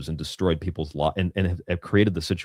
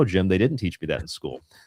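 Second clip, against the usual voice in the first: ordinary talk, nothing marked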